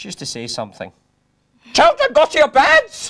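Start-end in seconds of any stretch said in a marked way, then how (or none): 1.7-3.1 shrill, very loud, bossy matron voice. Kidding on to be the bad woman from the story, Miss Hannigan impression. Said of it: "I'll kid on I'm Missus Hannigan".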